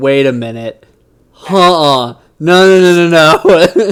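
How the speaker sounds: loud, stunned disbelief. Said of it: "I was like".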